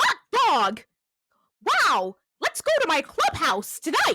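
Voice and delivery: belted high with big pitch swoops. Showing off a starter Mickey Mouse impression after asking the others if they're ready. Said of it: "I have actually a very good starter Mickey Mouse impression".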